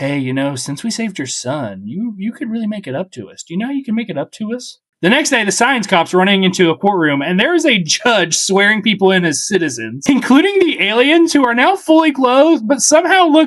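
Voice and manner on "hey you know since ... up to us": soft, hushed, confiding half-whisper. Voicing the alien who rubs the mom's back, half-whispering. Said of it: "he's sitting there and he's whispering".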